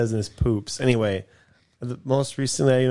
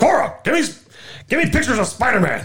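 mock-angry yell, much higher; 12 semitones higher, 4 dB louder than usual. Trying out voices with a friend, do a mock-angry J.K. Simmons impression. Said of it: "You could try being angry".

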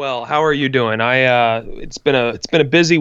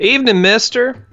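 put-on Western cowboy accent, slightly higher pitch; 8 semitones higher than usual. Doing a Red Dead Redemption bit on the episode, greeting someone: cowboy accent. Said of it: "do cowboy accents".

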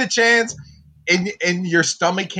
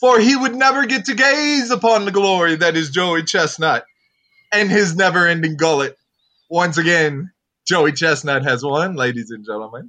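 sweeping, grand, epic contest-announcer proclamation. Declaring joey chestnut's win, channeling the hot dog contest announcer. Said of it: "I was trying to channel their announcer".

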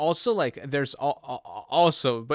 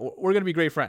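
ordinary talk

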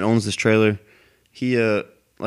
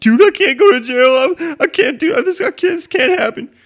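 mock bawling, much higher and louder; 7 dB louder than usual. Acting out one dude's reaction after they went back inside; imitating a dude bawling.

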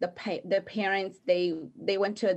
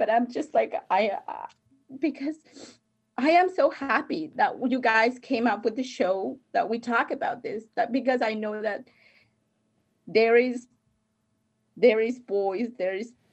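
talking through tears; 3 semitones higher than usual. A guest on the show, thanking the hosts, crying while talking. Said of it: "So I'm sorry that I get to cry".

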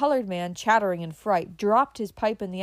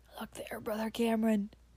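hoarse, emotional cried-out voice; 7 dB quieter than usual. A man stops muttering, stares into the darkness and calls to brother cameron; cried out hoarsely. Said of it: "he cried, hoarse with emotion".

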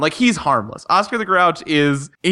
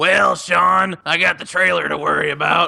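raspy voice, creaky and rough; 3 semitones higher than usual. Show how Sean's janitor dad talks as he speaks to Sean, in a Sean's dad voice. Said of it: "Sean's dad talks like this".

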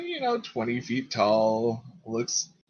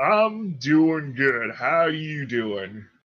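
big swamp creature voice, giant crocodile king; 2 semitones higher than usual. Voicing a giant alligator figure answering a visitor: voicing the crocodile king. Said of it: "it looks down at Lenny and, uh, says back".

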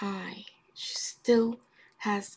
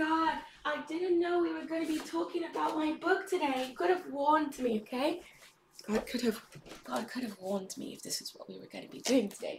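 put-on British accent throughout, pitched up; 7 semitones higher than usual. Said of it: "talk in a British accent today".

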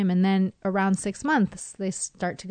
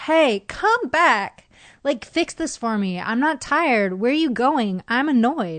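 high, raised, fussy, annoyed crying; 5 semitones higher, 6 dB louder than usual. Acting out what the daughter's annoyed cry says at bedtime: imitating an annoyed cry. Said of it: "the cry that says".

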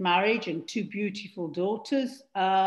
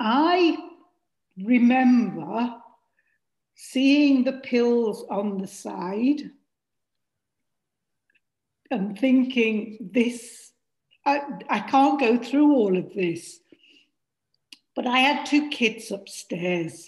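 slow, heavy, emotion-laden delivery; 3 semitones higher, 5 dB louder than usual. Recalling a desperate time as a single parent, emotional. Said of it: "I get emotional at this point".

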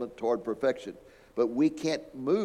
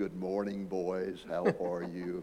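deep, soft, gentle computer voice; 5 semitones lower, 6 dB quieter than usual. Retelling the movie 2001, quoting the ship's computer Hal, Hal's deep, soft voice. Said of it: "he has this deep, soft voice".

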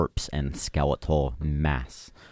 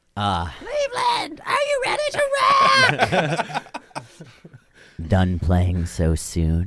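eerie, ghastly, very high, shrill, swooping voice; 12 semitones higher, 5 dB louder than usual. The game narrator voices a figure addressing the players, in a ghastly voice. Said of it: "addresses you with a ghastly voice".

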